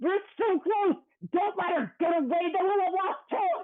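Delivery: loud screaming. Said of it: "what are you screaming in the ethereal".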